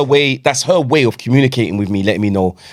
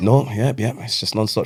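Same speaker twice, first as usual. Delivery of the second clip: usual speaking voice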